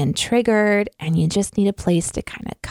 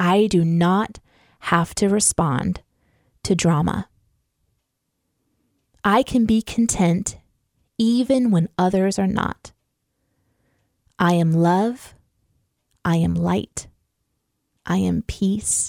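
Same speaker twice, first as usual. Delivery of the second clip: speaking slowly. Reading affirmations to listeners with eyes closed, speaking slowly. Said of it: "I'm going to speak them kind of slowly to you".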